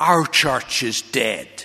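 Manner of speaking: Midland brogue. A young minister retelling what a man told him, in a broad Midland brogue. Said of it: "in his broad Midland brogue".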